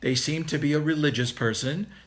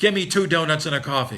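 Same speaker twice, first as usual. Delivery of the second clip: barked, crude tone, louder; 4 dB louder than usual. Acting out a customer at a Dunkin Donuts counter, barking an order. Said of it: "They bark an order".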